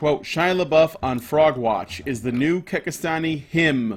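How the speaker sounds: normal talking voice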